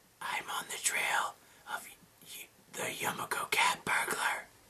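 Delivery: comfortable, low, hushed whisper. Narrator reads a character's line after she checks for eavesdroppers, in a comfortable whisper. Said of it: "Yuka lowers her voice to a comfortable whisper".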